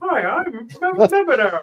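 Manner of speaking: very slow, stumbling. Joking about a stand-in leader, doing a Medvedev impression: imitating Medvedev. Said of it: "this is like".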